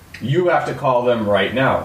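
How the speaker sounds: mock firm, adamant, no-arguments insistent tone. Telling a story from teenage years, acting out someone's mom, retelling adamant insistence. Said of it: "she was very adamant".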